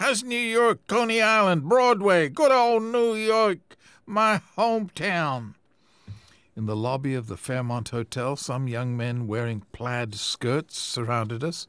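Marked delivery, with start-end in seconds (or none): 0.0-5.5 very high, booming, loud roar. The fireman outside the station calls back to the visitors, roaring with a grin. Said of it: "The fireman roared back with a grin".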